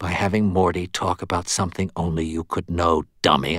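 ordinary delivery

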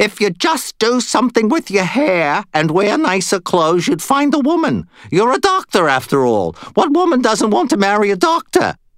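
slight Yiddish lilt, pitched very high. Narrator voicing a character addressing a doctor, with a slight Yiddish accent. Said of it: "Did he just get a little Yiddish accent?".

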